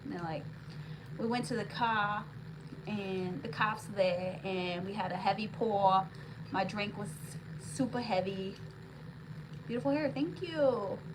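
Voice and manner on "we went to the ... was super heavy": slow, drawn-out put-on Boston accent. Quoting what people said about a night out, in an imitated Boston accent. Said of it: "I do a pretty good like Boston accent".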